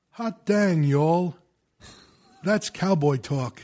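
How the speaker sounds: slow, deliberate, drawn-out, unhurried pronouncing tone. Retelling what the odd trainer Henry would say: imitating Henry. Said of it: "he'd look at you and go".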